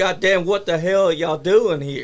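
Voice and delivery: angry, fed-up outburst, fuming. Retelling an outburst while handcuffed to a ring post: imitating Chris screaming. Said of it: "He's screaming".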